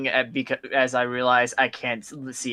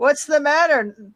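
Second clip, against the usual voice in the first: shouted down from above, very high and loud; 14 semitones higher, 5 dB louder than usual. Voicing a character calling down about a medallion: yelling down. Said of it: "yelling down".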